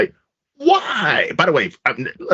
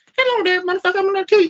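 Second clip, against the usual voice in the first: very high, rushed, fast silly voice. Imagining Michael Myers with a Mike Tyson voice, do the Mike Tyson voice. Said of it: "Mike Tyson voice?".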